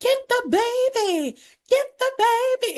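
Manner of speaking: very high, stretched-out, drawn-out repeated scream. Recounting a scene where the mom kept screaming, imitating a mom screaming. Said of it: "she just kept screaming".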